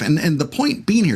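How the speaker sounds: plain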